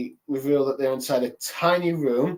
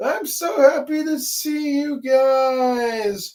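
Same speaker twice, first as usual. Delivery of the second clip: play-acted very high, drawn-out weepy sob; 11 semitones higher, 3 dB louder than usual. Recapping the scene where the Straw Hats find Chopper: imitating Chopper crying. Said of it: "Chopper crying, going like".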